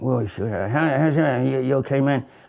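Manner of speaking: put-on voice of an elderly politician. Asked for an impression, doing Joe Biden greeting someone: Joe Biden impression. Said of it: "Do you do an impression of Joe Biden?".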